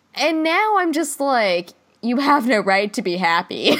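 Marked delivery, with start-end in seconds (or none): 2.0-3.7 put-on spiteful, vindictive tone. Acting out own reaction to a TV character: imitating own vindictive tone. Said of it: "I'm very vindictive".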